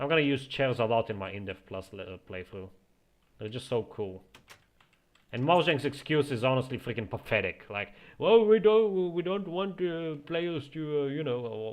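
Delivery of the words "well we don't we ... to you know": fake Indian accent, spokesman style, pitched up. Mocking an excuse given by Mojang for having no chairs: put-on Indian accent, mocking Mojang. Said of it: "why am I talking in an Indian accent?".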